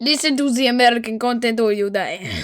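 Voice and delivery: mocking, bad, put-on Russian accent. Repeating the other person's line back at them, mocking a bad Russian accent. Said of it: "That's not a Russian accent".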